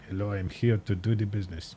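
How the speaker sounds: over-the-top put-on French accent, outrageous. Recalling a woman by the train, speaker voices her in outrageous French accent. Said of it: "gave her a French accent, or at least an outrageous French accent".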